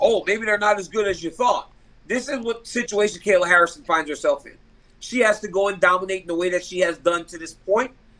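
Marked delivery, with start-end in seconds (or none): none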